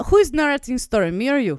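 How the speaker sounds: put-on Russian accent. Narrating a spaceship story after being asked to: Russian accent. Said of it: "could she be Russian?".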